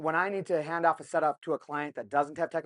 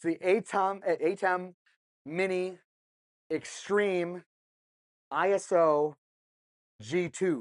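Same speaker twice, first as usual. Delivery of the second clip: very slow, halting, piece-by-piece delivery; 2 semitones higher than usual. Speaker names a product with a long model name, saying it really slow. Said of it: "so I'm going to say it really slow".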